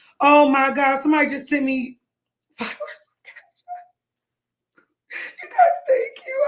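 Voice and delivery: tearful, swooping, half-crying voice. Thanking people who just sent money, speak tearful. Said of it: "I don't know when to start crying again".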